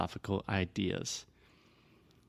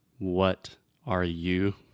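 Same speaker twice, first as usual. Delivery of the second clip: careful, slow, each word said separately. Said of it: "I'm combining the words".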